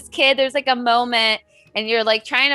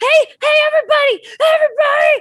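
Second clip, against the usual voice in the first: loud, swooping, rising yell; 5 dB louder than usual. Voicing a kid who resists a spell and calls for help: kid yelling out loud. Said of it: "he starts to, like, yell out loud".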